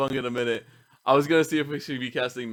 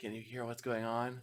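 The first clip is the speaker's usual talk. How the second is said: very soft, quiet half-whisper; 3 semitones lower, 15 dB quieter than usual. A player's character, lying on their back, half-whispers to their brother. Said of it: "I whisper to my my brother".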